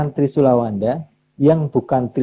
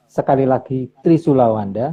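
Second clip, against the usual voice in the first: usual speaking voice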